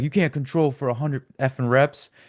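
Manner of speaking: all-out screamed call. Retelling a trainer shouting back at a random dude: imitating Elliot Hulse screaming. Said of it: "Elliot's screaming at him".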